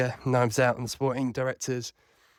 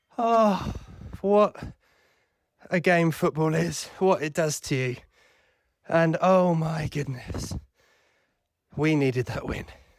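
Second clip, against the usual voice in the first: breathless, pitched higher; 5 semitones higher than usual. Recording a voice note after running around the garden: out of breath. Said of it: "get my breath".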